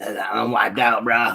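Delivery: voice like a veteran pro wrestler. Voicing what the pictured figure is saying, in an old wrestler voice. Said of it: "He sounds like an old wrestler".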